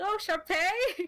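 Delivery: loud, high calling out, voice carried far. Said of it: "You try to use the voice, like".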